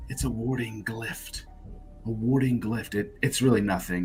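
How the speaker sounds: speaking in a whisper. Speaking in character to another character: whispering in character. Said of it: "whisper to Inaka".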